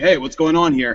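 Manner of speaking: plain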